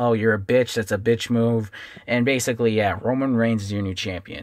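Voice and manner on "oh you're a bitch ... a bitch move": ordinary talk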